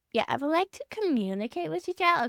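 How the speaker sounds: sassy, attitude-filled, acted-out delivery. Retelling what a dance teacher says, sassy retelling of a teacher. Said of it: "I'm too freaking ever-loving sassy to say it".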